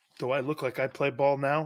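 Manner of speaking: ordinary talk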